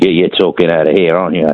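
put-on slipping slightly into a cockney accent. Questioning another speaker about who pays for the podcast: slipping into a cockney accent. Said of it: "You went a bit cockney there".

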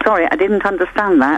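normal talking voice

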